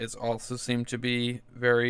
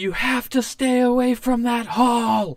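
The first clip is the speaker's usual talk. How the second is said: very loud, high, shrill scream; 12 semitones higher, 7 dB louder than usual. Voicing a character who screams a warning from the north: NPC screaming a warning. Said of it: "she screams".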